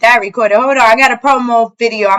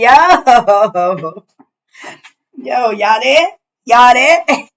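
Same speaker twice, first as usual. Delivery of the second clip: very slow, drawn-out fake New York accent. Opening the show, the host greets listeners in a fake new york accent. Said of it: "That's my fake like New York accent".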